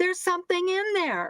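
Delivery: high, yelling scream. Speaker recalls reacting to a refusal to release files, retelling screaming at the tv. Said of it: "And I'm screaming at the T V".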